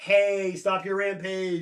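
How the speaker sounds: acted-out, mock pleading tone. Recounting a story's plot, acting out a family's pleading. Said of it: "her family's pleading like".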